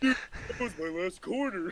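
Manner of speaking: animated starfish character voice. Voicing over a cartoon scene because he knows all the lines, Patrick voice. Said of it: "that is an excellent Patrick".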